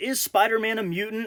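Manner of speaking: normal talking voice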